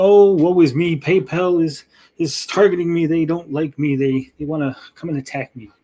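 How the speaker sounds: ordinary delivery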